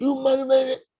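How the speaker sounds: mock angry yelling. Recounting a woman who called back after being hung up on, retelling her angry yelled curse. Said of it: "she's yelling and she's cursing at me".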